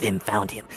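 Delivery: very low, deepest possible put-on voice. Retelling someone's line after they catch a scent: deep Batman voice. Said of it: "in the deepest Vim voice".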